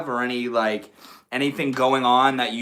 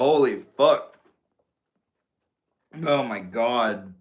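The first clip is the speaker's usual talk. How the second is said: slow, choked-up, choking exclamation. Streamer greeting viewers right after inhaling a drink of water; choking on water. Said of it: "I just inhaled my water".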